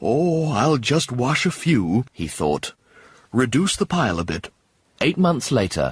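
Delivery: plain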